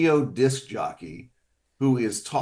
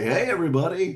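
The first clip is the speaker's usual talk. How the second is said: pitched-up announcer voice with polished FM radio DJ style; 7 semitones higher than usual. Describing a movie sound session, doing his press box voice with an FM DJ flavor. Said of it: "I kind of do my press box voice".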